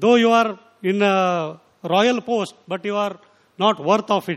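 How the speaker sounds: ordinary delivery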